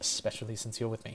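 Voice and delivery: barely voiced, hushed whisper under the breath. Voicing a character who reassures a guest at an establishment: whispering under her breath. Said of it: "She'll whisper that last bit under her breath".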